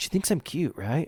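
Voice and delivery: loud stage whisper meant to carry. Acting out a guy asking his bros about a girl, acting out a loud whisper. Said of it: "Got a loud whisper".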